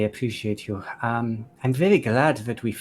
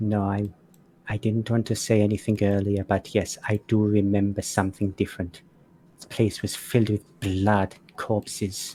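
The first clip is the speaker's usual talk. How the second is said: quiet, low stage whisper. A game master voices Namika speaking to the group as they walk: low half-whisper. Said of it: "Namika whispers in a low voice".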